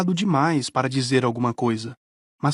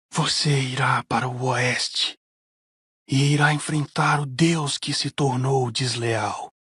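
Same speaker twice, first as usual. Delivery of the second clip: hoarse, raspy oracle voice. Narrator tells how Gabe turns to him and speaks, raspy oracle voice. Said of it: "falou na voz rouca do oráculo".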